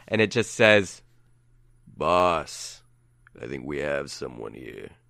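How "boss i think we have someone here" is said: very deep, low, soft voice. A game master voices a big guy in a fez speaking to his boss, in a deep voice. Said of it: "it's that deep voice".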